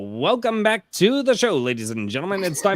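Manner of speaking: put-on high, nasal, old forties radio transatlantic announcer accent. Showing how forties and fifties broadcasters sounded: transatlantic accent. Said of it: "The transatlantic accent, I believe it was called".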